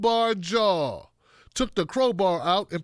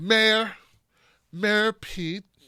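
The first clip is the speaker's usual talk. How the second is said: acted condescending, snippy tone giving no weight. Retelling how a woman said it, imitating her condescending tone. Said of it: "like very condescending".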